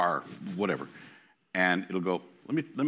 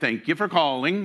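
put-on Norwegian accent, higher and louder; 8 semitones higher, 5 dB louder than usual. Retelling how the phone system read the greeting: imitating a norwegian accent. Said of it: "the whole Norwegian accent thing".

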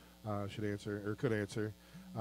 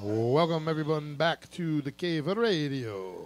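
puppet vampire count voice, "radio" drawn out; 4 semitones higher, 4 dB louder than usual. Welcoming listeners back to the show: Count from Sesame Street voice. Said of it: "the count from Sesame Street all of a sudden".

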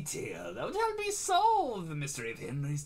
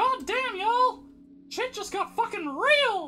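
very high, raised, loud cartoon voice; 7 dB louder than usual. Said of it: "I don't know why I'm doing Mickey".

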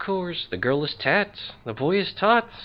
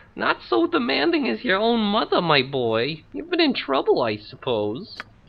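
put-on elderly motherly woman's voice; 4 semitones higher than usual.

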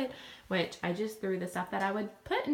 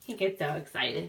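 plain

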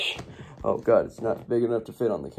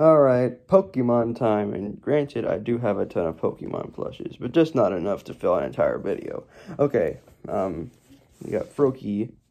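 ordinary talk

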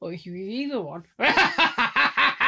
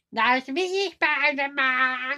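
put-on villain voice with weird laugh, higher; 3 semitones higher than usual. Showing how characters laugh, doing Green Goblin: Green Goblin voice. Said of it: "And Green Goblin goes".

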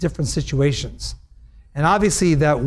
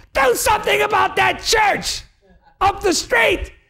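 shrill, very high-pitched, drawn-out, stretched-out yelling rant. Retelling what a woman on the street said: imitating a woman yelling. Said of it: "she was yelling".

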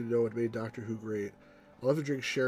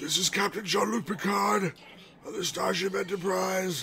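feeble, weak voice, pitched up; 7 semitones higher than usual. Comparing the old and the new Picard, imitating weak old Picard. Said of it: "His voice is so weak".

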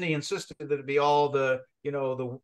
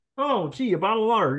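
high-pitched puppet-style voice; 7 semitones higher, 3 dB louder than usual. Speaker imagining someone in the studio reaching for water, doing Ernie voice. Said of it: "it's going to take Ernie".

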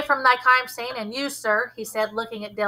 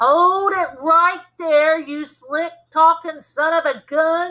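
put-on slow, high, slurred drunken speech, words smeared together; 5 semitones higher than usual. Dale's daddy speaks up from behind the narrator, drunk slurring. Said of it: "he slurred".

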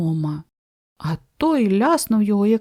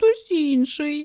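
tiny, high, mouse-like squeak, barely audible; 6 semitones higher than usual. Narrator reads Rodzinka answering old Grak's question, squeaking barely audibly. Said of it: "пропищав Родзинка ледве чутно, наче мишеня".

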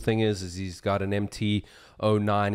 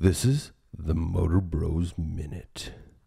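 epic, deep, slow movie-trailer announcer voice; 4 semitones lower than usual. Opening the show for a friend, showing off his movie trailer voice. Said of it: "This is my movie trailer voice".

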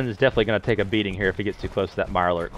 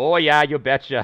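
pitched-up upper Midwest Minnesota accent; 5 semitones higher, 5 dB louder than usual. Playing a game and reaching Minnesota, riffing on it in a Minnesota accent. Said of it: "Minnesota. It's very Canadian".

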